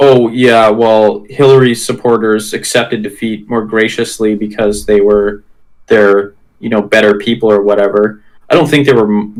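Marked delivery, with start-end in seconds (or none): none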